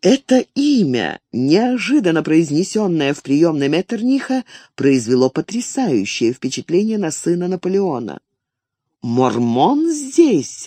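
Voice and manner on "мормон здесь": sudden cry, crying out. Napoleon's son hears an unexpected name spoken aloud and exclaims. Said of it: "воскликнул он".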